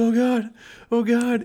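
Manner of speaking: put-on freaking out, very slow and drawn out. Retelling a friend whose nipple is bleeding: imitating someone freaking out. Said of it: "And he's freaking out".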